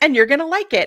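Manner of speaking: put-on snarky voice. Retelling what God said: imitating a snarky remark. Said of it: "I think God was a little snarky".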